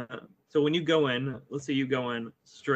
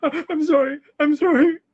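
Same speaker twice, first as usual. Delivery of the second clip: frightened, very high and loud; 10 dB louder than usual. Voicing the cultists as they bow before the player character: acting scared. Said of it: "kind of scared".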